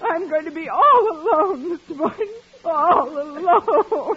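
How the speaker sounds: high-pitched, tearful sobbing right through the words. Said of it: "Don't, Miss Brooks. Please don't".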